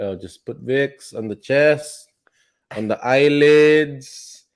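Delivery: put-on loud, high Filipino accent, "eyelids" stretched out. Imagining how Fauci would sound if he were Filipino, Fauci as Filipino, put-on accent. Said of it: "I could just imagine him like".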